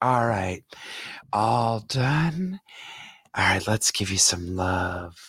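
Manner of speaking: drawn-out stage whisper, half-whispered. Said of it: "she just kept whispering in my ear".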